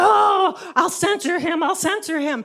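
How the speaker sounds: mock flustered, panicky fretting. Retelling how mom reacted to the news: imitating a freaked-out mom. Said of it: "my mom freaked out".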